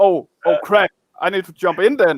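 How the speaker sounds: normal talking voice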